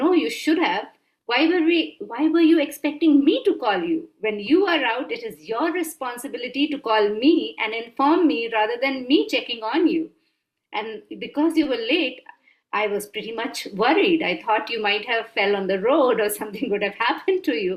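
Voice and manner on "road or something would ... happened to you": ordinary talk, nothing marked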